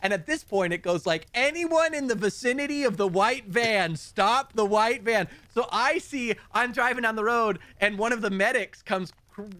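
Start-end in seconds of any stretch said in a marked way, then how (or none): 1.3-5.3 urgent, pressing, called-out delivery. Retelling a radio call-out to stop a van: imitating an urgent radio call. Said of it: "he starts calling more urgently".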